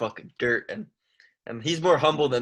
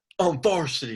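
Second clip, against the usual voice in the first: derisive, mocking send-up of a cringy, boastful fighter; 3 semitones higher than usual. Mocking a fighter who is called cringy: imitating him mockingly. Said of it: "he's like".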